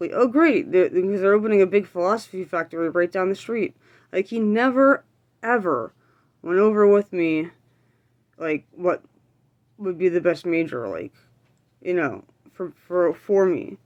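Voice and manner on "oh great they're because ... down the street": ordinary talk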